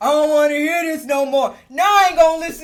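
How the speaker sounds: very loud, bellowed put-on man's voice. Recounting a man going off and refusing to listen, imitating a man's deep voice. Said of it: "where did that deep voice just come from".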